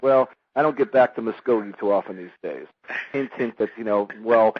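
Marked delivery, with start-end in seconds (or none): none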